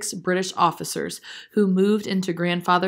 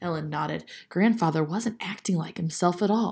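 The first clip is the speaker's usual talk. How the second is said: plain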